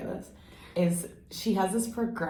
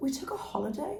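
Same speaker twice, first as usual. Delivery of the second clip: very high-pitched put-on British accent; 9 semitones higher than usual. Opening a podcast episode, a host talks about the show's break: british accent. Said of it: "Look at you in your British accent".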